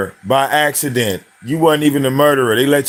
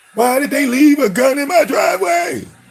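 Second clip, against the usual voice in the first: mock, very high, shrill, frightened panicked screech; 12 semitones higher than usual. Mocking someone who found a gun in their driveway: imitating someone screaming in fear. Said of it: "Screaming like a bitch".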